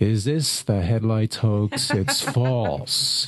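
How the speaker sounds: tired, weary, worn-out voice. Recalling calling the state police, the speaker imitates a very tired trooper. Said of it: "this very tired Illinois State Police trooper said".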